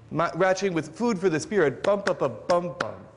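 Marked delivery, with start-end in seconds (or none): 1.8-2.9 stress pattern beaten out as "bum" rhythm syllables. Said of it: "It's the same pattern in both cases".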